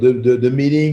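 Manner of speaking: plain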